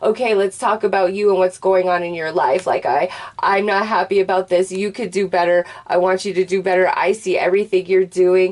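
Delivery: ordinary talk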